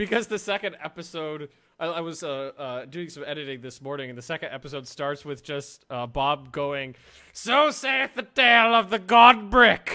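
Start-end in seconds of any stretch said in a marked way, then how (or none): 7.3-10.0 screamed, very loud, high, drawn-out. Retelling how an episode starts, imitating Bob screaming. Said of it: "Just screaming it into the microphone".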